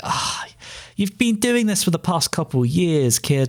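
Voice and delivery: put-on disappointed teacher tone. Acting out a teacher handed copied homework: imitating a disappointed teacher. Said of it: "like a disappointed teacher".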